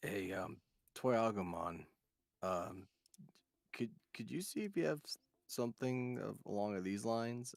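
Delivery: soft, hushed, voiceless half-whisper. Asking a shopkeeper character for something in secret: half-whispering. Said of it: "I go up to him and I whisper".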